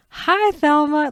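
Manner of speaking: put-on overly nice, friendly tone. Retelling how Daryl answers Thelma's call: imitating a really nice greeting. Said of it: "like, really nicely".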